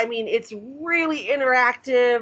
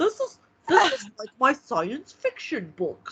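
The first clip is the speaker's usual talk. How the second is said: put-on, animated nerd voice with swooping pitch. Quoting him on his transition to paganism, in a nerd voice. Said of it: "that's my nerd voice for him".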